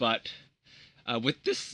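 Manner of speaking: cracked, breaking voice, cracking mid-phrase. Explaining a restricted card and its list, voice cracking. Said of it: "my voice cracked".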